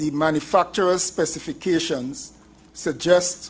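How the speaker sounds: slow, deliberate, carefully paced delivery.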